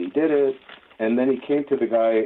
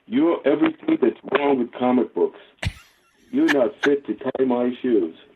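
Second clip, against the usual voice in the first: put-on earnest, dead-serious New Jersey accent; 3 semitones higher than usual. Retelling what Vinny told the speaker at a group dinner, imitating Vinny's Jersey accent. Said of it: "in his best uh, Jersey accent".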